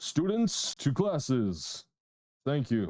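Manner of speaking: booming, slow, drawn-out delivery. Storyteller voices a spell-cast announcement heard in front of the students: booming voice. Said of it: "you hear a booming voice".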